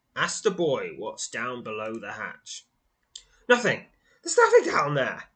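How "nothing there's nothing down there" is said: very high, very loud, rushed and flustered blurt. Asked what is below the hatch, the man blocking the way answers, a bit flustered. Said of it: "a bit flustered".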